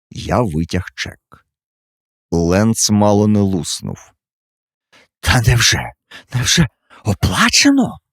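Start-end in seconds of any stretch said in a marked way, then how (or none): 5.2-7.9 hoarse, squeezed-out, forced, pitched-up words. Reading a novel aloud, the narrator voices a character reacting to a check: hoarsely squeezed out. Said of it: "хрипко видушив він з себе".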